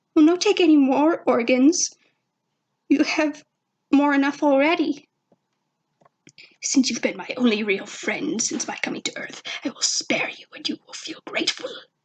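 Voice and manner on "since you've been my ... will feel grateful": fast, hurried whisper, under the breath. A narrator reads a character's line, whispering. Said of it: "Zim whispered".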